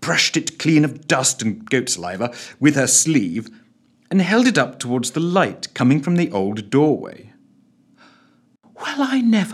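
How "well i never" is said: breathed, higher, almost unable to speak. She holds up the object she cleaned, breathed, almost unable to speak. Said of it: "she breathed, almost unable to speak".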